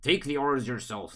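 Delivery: quick put-on frog character voice. Narrator voicing the listener's character telling them to take orders: frog voice. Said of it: "that's the frog voice".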